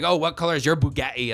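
put-on taunting tone in a London accent. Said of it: "you sound like you're from London".

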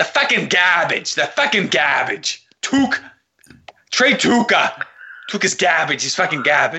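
put-on South Boston local accent. Describing a Bruins fan he knows reacting when the team loses, in a Southie Boston accent. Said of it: "He sounds like he's from Southie".

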